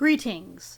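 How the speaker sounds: grand, pompous, self-important voice. Greeting the others at the start of the episode: self-important voice. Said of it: "I like speaking like this because it makes me sound important".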